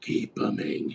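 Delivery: whispered, breathy, dark superhero vigilante voice. Redoing a friend's sign-off line that came out like Batman: Batman-like voice. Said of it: "it kinda sounded like, uh, Batman".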